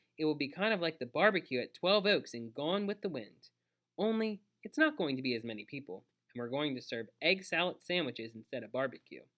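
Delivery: ordinary delivery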